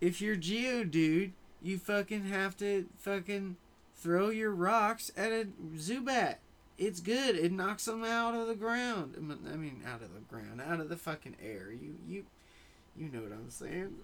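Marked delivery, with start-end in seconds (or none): 0.0-9.1 loud, high, not-great put-on Southern accent. Voicing a Pokemon farmer who has just appeared, in a southern-ish accent. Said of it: "that was my southern-ish accent".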